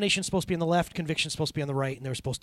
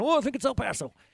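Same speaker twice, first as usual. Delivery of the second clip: high, put-on elderly old person voice; 9 semitones higher than usual. Imitating an old person trying to recall a town: imitating an old person. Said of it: "I'm doing that old person thing again".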